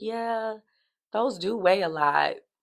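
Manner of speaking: mock sarcastic, drawn out. Retelling someone's reply about heavy shoes: imitating sarcastic agreement. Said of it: "Not you sarcastically agreeing with me".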